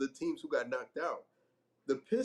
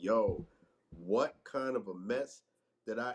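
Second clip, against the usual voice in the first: slow, shocked, stunned disbelief; 5 semitones lower than usual. Imitating a newcomer in interviews reacting to a mess: imitating shocked disbelief. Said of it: "he sounded like the person who came over for Thanksgiving".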